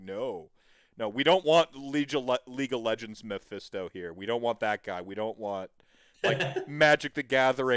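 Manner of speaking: ordinary delivery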